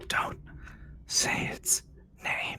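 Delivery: very slow, drawn-out, hushed whisper. Voicing a hidden figure under the bed answering a player: whispering. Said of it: "you hear a whisper from underneath your bed".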